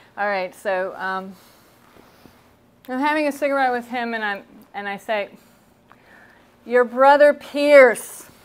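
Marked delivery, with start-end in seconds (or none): 6.7-8.3 very loud, projected, raised-voice talking. Retelling asking a man who can't hear well: imitating own loud speaking. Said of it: "I'm having to speak really loud".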